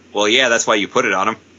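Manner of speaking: put-on mutter under breath. Retelling a reply said quietly to the screaming: imitating muttering under breath. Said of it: "under his breath".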